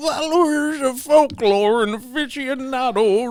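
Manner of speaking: put-on reading in a drunk priest voice. Reading a quoted article aloud on request: drunk priest voice. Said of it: "we got him like a drunk priest".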